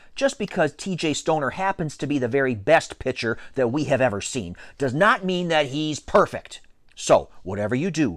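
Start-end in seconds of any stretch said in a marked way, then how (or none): none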